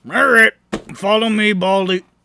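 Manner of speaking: brusque, insulting tone. Voicing a shopkeeper leading a player to follow him: rude. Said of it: "this guy's so rude".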